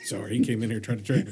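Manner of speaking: ordinary talk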